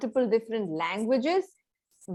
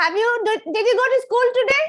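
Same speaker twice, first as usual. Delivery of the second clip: very high, loud, piercing shrill voice; 11 semitones higher, 8 dB louder than usual. Two speakers agree to continue a short conversation in a loud, shrill voice. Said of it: "continue a conversation in a loud and a shrill voice".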